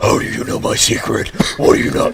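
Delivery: stylized horror-movie creep, rough and creaky. Retelling a prank call from a graphic novel: imitating a super creepy voice. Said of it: "the super creepy voice responds like".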